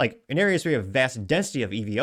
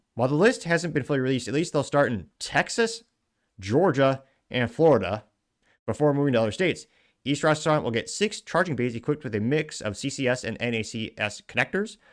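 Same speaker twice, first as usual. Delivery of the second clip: ordinary talk, nothing marked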